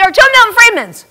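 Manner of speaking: high, loud screeching outburst. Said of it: "But I was already screeching".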